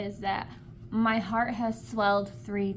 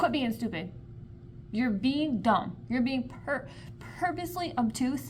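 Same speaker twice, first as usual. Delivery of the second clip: irritated, fed-up, annoyed scolding tone; 2 semitones higher than usual. Reacting to a book character, pissed off. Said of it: "it's pissing me off".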